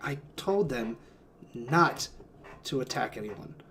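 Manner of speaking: quiet, resigned mutter, barely audible. Voicing a character who resigns after being confronted: resigned, said just loud enough to hear. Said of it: "just loud enough that he's like".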